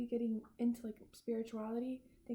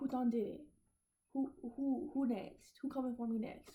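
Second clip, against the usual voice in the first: jittery, paranoid, suspicious detective voice. Mocking someone who anxiously plays detective: mock paranoid detective. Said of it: "You don't have to play detective".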